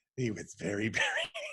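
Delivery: very slow, hushed, swooping spooky narration. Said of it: "So I might act out".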